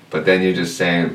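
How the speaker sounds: normal talking voice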